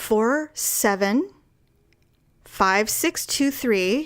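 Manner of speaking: awkward, slow, uneven, lurching, off-rhythm delivery. Recalling reading numbers aloud: digits in an uneven rhythm. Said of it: "I started reading it in an off rhythm".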